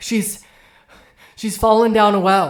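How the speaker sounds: very loud, high, frantic panicked cry. Playing a character in a role-play scene who comes asking for help, panicked. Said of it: "he's just in a panic".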